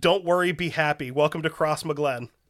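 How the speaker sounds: ordinary delivery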